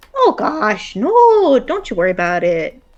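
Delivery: exaggerated, sing-song northern Wisconsin accent, laid on extra. Playing a scene, speaking in a northern Wisconsin accent. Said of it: "threw a little more like northern Wisconsin in".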